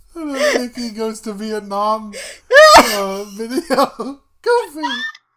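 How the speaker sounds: high, crying-laughing through the words.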